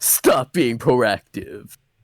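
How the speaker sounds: put-on evil robot leader voice. Imitating an evil version of Optimus: evil Optimus voice. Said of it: "Evil ass Optimus be like".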